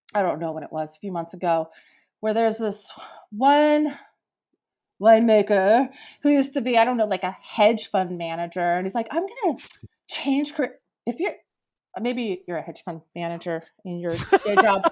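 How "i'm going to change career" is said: soft, high, pompous, self-important big-shot voice. Telling about a hedge fund manager turned winemaker, mocking a douchey winemaker. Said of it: "I have to do my voice like that because it just was such a like a douchey thing".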